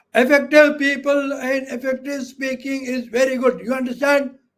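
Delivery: loud, high-pitched shouting. Teaching about pitch in speaking, demonstrating shouting. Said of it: "why is he shouting?".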